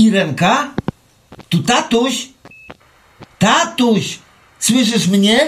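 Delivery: high-pitched yelling. A father on a faint phone line calling his daughter: shouting into the phone. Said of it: "Nie krzycz tak, Stasiu".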